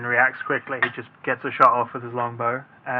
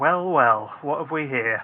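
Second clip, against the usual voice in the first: voice of an emaciated kobold creature. Running a game, voicing a kobold that greets the players, in a kobold voice. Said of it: "in a kobold voice, obviously".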